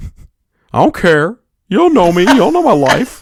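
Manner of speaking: hateful, high, loud put-on dog voice. Voicing his dog answering back after tracking mud in: put-on dog voice. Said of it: "His response was".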